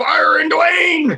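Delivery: loud, very high-pitched voice. Retelling [name]'s call showing how his boss sounds, imitating a boss's voice. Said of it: "This is how my boss sounds".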